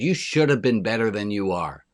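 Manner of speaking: snooty, snotty, snarky voice. Quoting the inner voice that says you should be better: imitating a snotty inner voice. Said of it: "The snotty voice in our own head that says".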